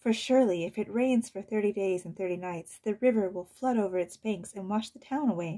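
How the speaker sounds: ordinary delivery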